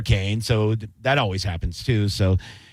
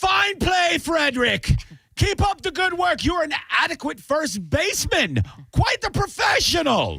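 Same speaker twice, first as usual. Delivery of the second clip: very high, overly formal, sing-song sarcastic tone.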